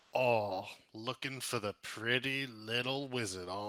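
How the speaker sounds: mocking, amused, laughing. A game master voices an unseen figure taunting the players; amused taunt. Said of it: "you hear a laugh and be like".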